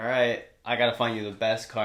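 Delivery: ordinary delivery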